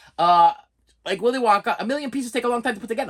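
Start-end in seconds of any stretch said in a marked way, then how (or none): 1.8-3.1 rapid-fire delivery, quick and pitched up. Speaker quotes a movie line the way a character says it: said really fast. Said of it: "I said that really fast".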